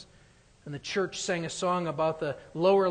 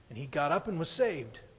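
plain

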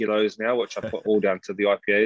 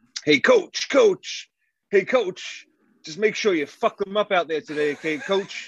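very high, slow, drawn-out holler; 11 semitones higher than usual. Retelling what a guy behind the posts yells at warm-ups: imitating Wes yelling. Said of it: "he's yelling out to us, and it goes something like this".

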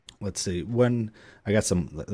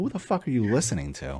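ordinary talk, nothing marked

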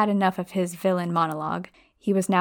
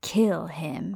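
hissed, threatening, menacing tone. A narrator reads Riddle's order to kill Harry, hissed. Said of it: "Riddle hissed".

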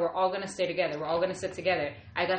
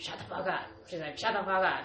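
put-on grown man's voice; 3 dB quieter than usual. Retelling what she said as the family prayed, imitating a man's voice. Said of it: "in a man's voice".

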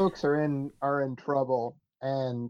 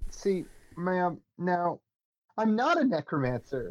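pitched-up, objecting, insistent in-character protest; 5 semitones higher than usual. Voicing Lacey denying being a necromancer: protesting in character. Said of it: "Lacey protests".

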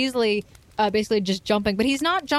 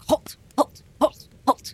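barking dog voice, higher; 4 semitones higher than usual. Narrating a cave scene, voicing a large dog, in a barking dog voice. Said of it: "So he continues to bark".

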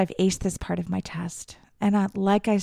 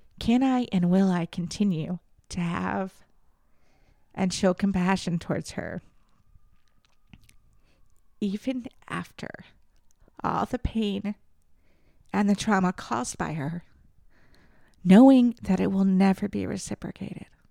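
speaking while actually crying, tearful. Talking about her mother, while crying. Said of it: "I'm actually crying".

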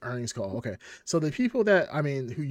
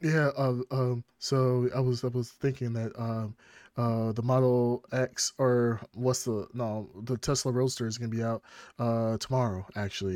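stumbling, halting delivery full of ums. Imitating a CEO on an investors call announcing a car: Elon Musk impression. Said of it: "It's a good impression".

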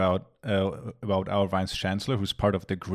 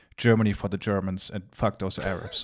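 ordinary talk, nothing marked

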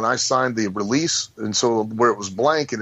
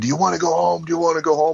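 mock high screaming, badgering, repeated twice over; 6 semitones higher than usual. Retelling being held in a rear chin lock: imitating Ole screaming. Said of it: "Ole's again screaming".

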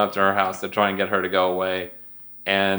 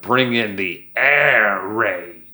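very slow, put-on cartoon character voice; 3 dB louder than usual. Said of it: "That was a good ass impression".

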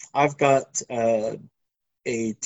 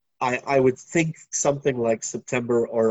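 usual speaking voice

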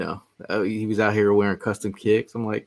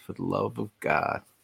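put-on whispering voice; 3 semitones lower, 6 dB quieter than usual. Reacting as a player signed, saying the line in Geo voice. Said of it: "in my best Geo voice".

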